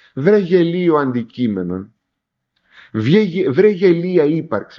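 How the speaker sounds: usual speaking voice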